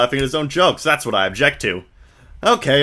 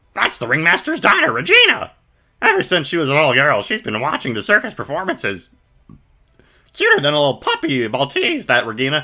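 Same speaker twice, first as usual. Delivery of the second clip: goofy, silly, swooping character voice; 2 semitones higher than usual. Voicing a clown character while playing, in a silly voice. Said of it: "He begs to have a silly voice".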